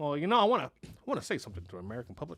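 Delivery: swooping, sing-song speechmaking pitch. Imitating a president addressing the public: Barack Obama impression. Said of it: "Barack Obama sounded like George Bush".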